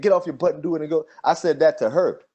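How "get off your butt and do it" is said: mock, loud, scolding hollered shout. Retelling how a TV character shouts at someone: imitating a shout. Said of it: "be shouting at him and say".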